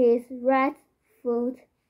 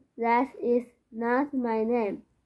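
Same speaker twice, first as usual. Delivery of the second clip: ordinary talk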